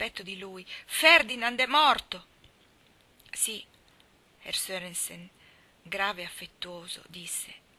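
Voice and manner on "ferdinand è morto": very loud, rasping, hoarse shout. A woman cries out against a man's chest, shouting hoarsely. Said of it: "gridò forte e con voce rauca".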